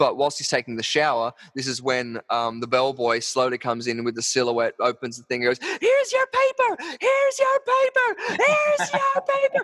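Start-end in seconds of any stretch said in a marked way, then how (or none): 5.8-9.6 very high, screeching, drawn-out shrieks. Describing a Hitchcock shower-scene parody, the bellboy calls out: shrieking stab sounds. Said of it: "this streaking sort of similar sort of effect".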